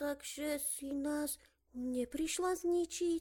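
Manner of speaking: small, scared voice, soft, high and slow. A little head peeking from behind a strange machine asks Zojka: frightened little voice. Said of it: "s vystrašeným hláskom".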